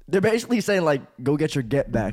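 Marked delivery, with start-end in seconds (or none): none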